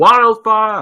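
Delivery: loud, high, alarmed shout.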